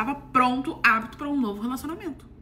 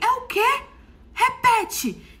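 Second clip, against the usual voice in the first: put-on loud, high, very slow, challenging, confrontational shout; 12 semitones higher, 5 dB louder than usual. Retelling how she yelled at a woman who whispered in his ear, retelling a shout. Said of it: "Eu só dei um grito e falei".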